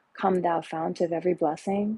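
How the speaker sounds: usual speaking voice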